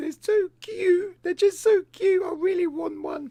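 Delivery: put-on tearful, pleading crying, very high-pitched. Recalling how she asked for a guinea pig; imitating someone crying. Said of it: "She started crying and she was like".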